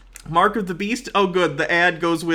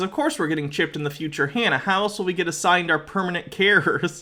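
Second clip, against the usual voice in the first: plain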